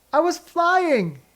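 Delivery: very high, squeaky little exclaiming squeak. Narrator reading a son's line after he tips backwards into the grass, squeaking. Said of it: "he squeaked".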